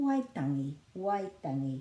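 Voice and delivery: Waitangi said with the first syllable stressed.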